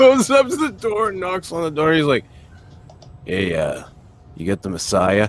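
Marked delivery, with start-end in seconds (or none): 3.2-5.3 put-on drunk voice, slower. Retelling a drunk guy knocking on a door, acting drunk. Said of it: "He was all drunk".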